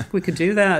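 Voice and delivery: put-on Liverpool-accented voice. Describing how they work together, the speaker imitates Brendan's Liverpool accent. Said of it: "he's from Liverpool, so he talks like this".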